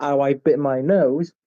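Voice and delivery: ordinary delivery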